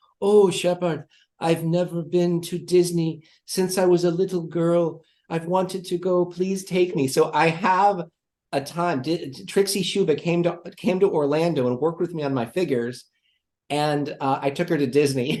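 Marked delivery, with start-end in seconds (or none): 0.2-7.1 put-on speaking with Austrian accent. Retelling how a visitor asked to be taken to Disney: Trixie Schuba's Austrian accent. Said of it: "She said in her Austrian accent".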